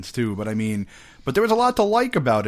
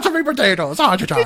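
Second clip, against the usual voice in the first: bad put-on Irish accent, higher and louder; 9 semitones higher, 5 dB louder than usual. Performing the Irishman impression again when asked: painful Irishman impression. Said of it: "Irishman impression that was painful".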